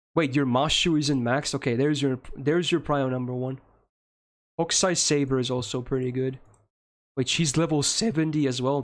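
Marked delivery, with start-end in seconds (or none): 7.2-8.8 cracking voice. Reviewing the listener's game characters, noticing another at level seventy, with a voice crack. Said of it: "That was a voice crack".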